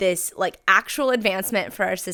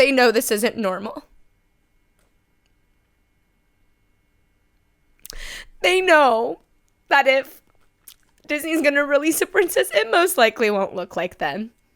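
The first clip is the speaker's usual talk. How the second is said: emotional voice welling up, raised and pitched up; 7 semitones higher, 5 dB louder than usual. Speaking to viewers, getting emotional. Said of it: "I'm getting emotional".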